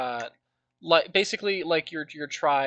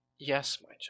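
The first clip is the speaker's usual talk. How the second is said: whispering divine voice, quieter; 7 dB quieter than usual. Voicing a voice that whispers through the wind to a hero: whispering divine voice. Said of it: "the voice whisper through the wind".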